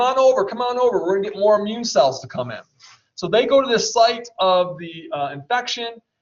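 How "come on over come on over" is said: mild, token half-shout. Speaker explaining immunity, voicing a t helper cell calling cells over, yelling. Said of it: "I'm yelling".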